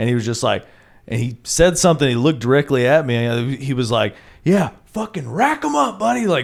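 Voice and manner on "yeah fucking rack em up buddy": acted very high, raspy, jeering shout, very loud. Retelling what a drunk guy near the stage said: imitating someone saying it real loud. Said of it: "said it, like, real loud".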